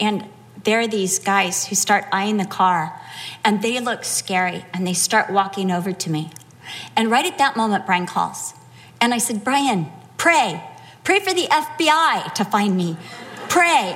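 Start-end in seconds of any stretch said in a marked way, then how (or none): none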